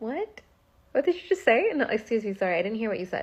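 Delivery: sweet, funny, cute, playful, giggling through. Showing how to respond to disrespect by pretending not to hear: cute and funny, laughing. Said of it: "cute and funny about it, or, like, laughing".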